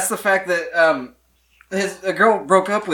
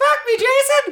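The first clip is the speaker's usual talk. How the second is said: very high squeaking falsetto. Riffing on a joke character who has to talk like a woman, Mickey Mouse-like voice. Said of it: "That sounded more like Mickey Mouse".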